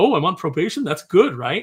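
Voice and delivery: all-excited, eager voice, swooping sing-song. Retelling a comic scene, acting out Peter on probation: imitating excited Peter. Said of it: "he's all excited about".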